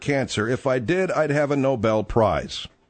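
ordinary talk, nothing marked

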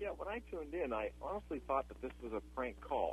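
barely audible, very soft.

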